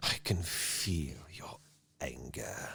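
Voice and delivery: quiet, low, slow, breathy voice. Quoting a villain's line to show he is not whispering: quiet Darth Sidious voice. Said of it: "It's more of a quiet".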